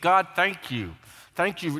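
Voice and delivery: mock forced gratitude through gritted teeth. Imitating a believer thanking God: imitating thanks through gritted teeth. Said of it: "through gritted teeth".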